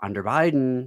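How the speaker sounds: plain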